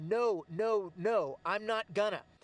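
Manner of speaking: plain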